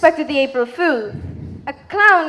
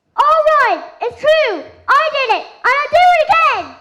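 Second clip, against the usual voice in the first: very high-pitched, villainous evil voice; 11 semitones higher, 3 dB louder than usual. Cindy Lou, named the culprit by the inspector, answers in the evil voice. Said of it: "she's doing the evil voice".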